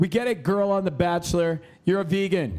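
play-acted fed-up, exasperated, enraged angry rant. Imitating people annoyed by vegans, imitating enraged people. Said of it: "Why are you so angry?".

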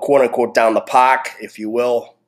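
Boston accent slipping out. Recalling how kids dealt with conflict growing up, with a Boston accent. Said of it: "Boston accent comes out when I say that".

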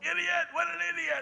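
put-on raspy yell, pitched way up high. Recounting their own driving habits, the speaker re-enacts yelling at a bad driver: retelling a yell. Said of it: "When I yelled".

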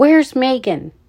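furious, loud, angry shout. A brother spins round and demands his missing sister: angry shout. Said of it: "he spun around and shouted".

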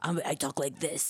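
breathy, whispered character voice. Retelling how a TV character was voiced: Rorschach voice. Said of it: "la voz era Rorschach voice".

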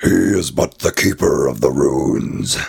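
rough, rasping, big and loud monster voice. Retelling a cartoon scene, quoting the monster: Snake Devil voice. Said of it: "And the Snake Devil's like".

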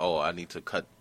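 ordinary talk

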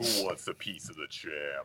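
acted very masculine voice. Asked whether there was a Jax voice, answering with a line: super manly Jax voice. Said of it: "you just talk in your like super manly voice".

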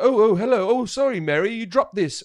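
fumbling, apologetic, bumbling British accent. Speaker describing a romantic comedy character, doing a bumbling British guy impression. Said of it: "a bumbling guy that'll be like".

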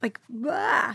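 soft, crying voice with sobs breaking through. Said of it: "makes me cry".

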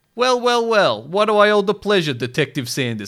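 mocking put-on voice, high, loud. In a story, the restaurant owner greets the detective: mocking Giovanni voice. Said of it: "Giovanni mocked".

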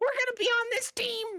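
put-on squeaky child voice. Retelling a young kid talking over surround sound: imitating a squeaky kid voice. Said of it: "I got this squeaker".

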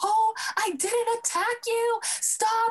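screaming at very high pitch. Retelling a fight caught on tape, quoting the woman who reached to hit, imitating her screaming. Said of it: "And she's screaming her head off".

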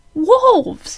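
sudden, very high, loud yelp. Prince Charming, finally getting his voice back, answers Snow, yelped. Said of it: "he yelped".

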